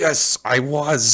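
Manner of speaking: contemptuous, high-pitched sneer. A defendant answering a question in court, sneering. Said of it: "he sneers at him".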